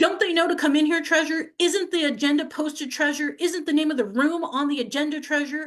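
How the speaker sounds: acted-out high, loud, berating scolding yell. Retelling how the city attorney questioned them: imitating someone yelling. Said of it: "starts yelling at me and says".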